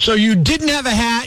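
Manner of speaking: normal talking voice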